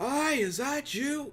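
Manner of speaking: very high-pitched shouted yell. A player shows the voice they'd use calling to another character, yelling. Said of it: "You don't have to yell".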